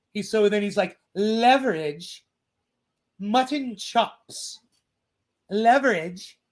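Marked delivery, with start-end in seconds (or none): 1.2-6.4 very slow, drawn-out, mocking delivery. You tell Billy about a man who won't say force the vote, imitating the man's tone of voice. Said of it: "I got the, the, the sound, the tonality of his voice right".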